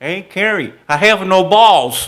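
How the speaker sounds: shrill, very loud, high-pitched yell. Recalling a foul ball while on the mound, the speaker imitates Joe's high-pitched yell. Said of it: "Joe had a high-pitched voice".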